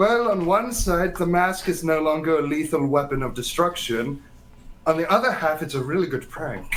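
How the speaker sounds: plain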